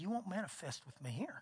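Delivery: quiet under-breath mutter. Retelling what the speaker said to a woman in a busy restaurant: retelling muttering under breath. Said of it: "right there under my breath".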